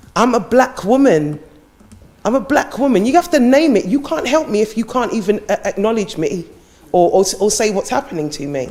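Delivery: passionate, intense insistence. Pressing a panel to name what affects real people's lives: impassioned. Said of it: "I sound a bit impassioned about it".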